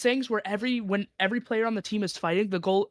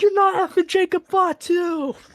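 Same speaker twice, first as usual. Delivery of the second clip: put-on drunk man's yell, higher and louder; 10 semitones higher, 7 dB louder than usual. Retelling how a drunk guy behind them yelled: imitating a drunk man yelling. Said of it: "He yelled".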